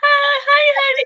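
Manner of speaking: very high, put-on, coaxing, wheedling voice. Speaker recalling the voice used at twenty when wanting new shoes, younger self's asking voice. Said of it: "that voice when I needed some new shoes".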